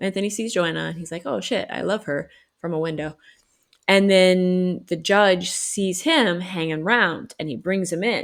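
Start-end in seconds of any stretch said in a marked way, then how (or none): none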